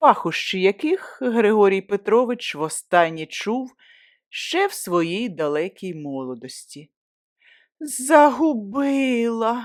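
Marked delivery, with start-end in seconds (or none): 7.8-9.6 sheepish, awkward, high, stretched-out drawl. Narrator reads a woman's line to a man, awkward drawl. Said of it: "протягла вона ніяково".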